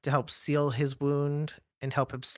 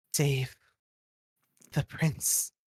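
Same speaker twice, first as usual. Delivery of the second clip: soft, barely voiced whisper. A game narrator voicing a figure who beckons you close to speak in your ear, whispering. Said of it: "And they whisper".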